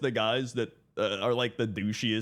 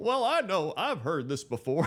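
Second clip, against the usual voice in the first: exasperated, pitched-up cartoon dad voice, high; 5 semitones higher than usual. Streamer says loud audio in his headphones reminds him of: Hank Hill impression. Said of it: "It's like Hank Hill putting on the thing like".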